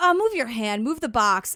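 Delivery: mock annoyed, exasperated, irritated tone. Speaker imitates the tone a man uses with her: imitating his annoyed tone. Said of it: "The tone he uses".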